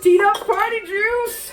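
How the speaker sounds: loud, high, slow hyped-up announcer-style call.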